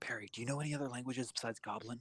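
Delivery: whispering. Asking a companion a question in character, whispering. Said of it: "I'm gonna whisper to her".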